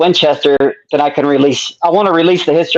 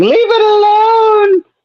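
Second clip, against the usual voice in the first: acted shrill sobbing wail, very high and stretched out. Telling viewers about an old meme, imitating a crying scream. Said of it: "that girl guy thing is screaming".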